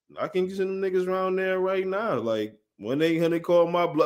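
plain

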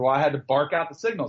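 ordinary talk

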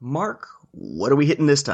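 on-air radio announcer voice. Moving on in a year-in-review episode, asking what's next: radio person voice. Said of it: "is my radio person voice".

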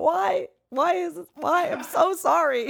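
very high, very slow sobbing. Speaker retells the moment they could not stop crying: retelling own crying. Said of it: "It just my body was crying".

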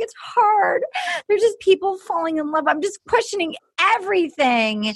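high, tearful voice, sobbing through words. Retelling how she starts crying while rehearsing: imitating Julie crying. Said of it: "And then she starts crying".

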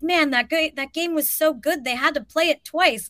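acted, eager, excited, gushing delivery. Retelling what a younger kid covering the game said: imitating an excited kid. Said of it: "real excited to have a credential".

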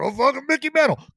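put-on old-timer voice, pitched high. Imitating an old guy answering who his favorite player is: imitating an old guy. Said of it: "some old guy looking at you going".

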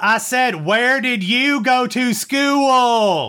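loud, very high put-on Southern accent, "school" stretched. Telling a joke, the Michigan grad repeats his question: put-on Southern accent. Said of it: "I had to do a voice for that one".

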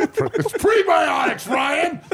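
furious, very high, very loud, shrill angry voice. Mimicking another speaker's correction about prebiotics: mock angry correction. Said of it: "So mad".

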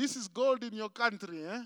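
taunting, mocking, teasing, derisive tone. Retelling an immigration officer's remark on seeing his Zim passport, imitating a mocking tone. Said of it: "the guy mockingly said to me".

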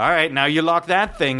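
normal talking voice

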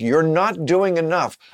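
preachy, nagging, hectoring lecturing voice. Speaker imitates an imagined voice telling them they aren't doing enough, mock-hectoring. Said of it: "this hectoring voice like".

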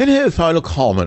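fake posh, breezy British accent. A host mocking people who speak a fake British accent, mock breezy Oxford-like accent. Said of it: "that breezy Oxford-like".

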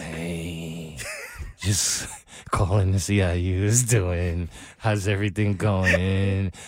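extremely slow, dragging out every word. Mocking messages that never get to the point, mimicking very slow talk. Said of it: "they talk mad slow".

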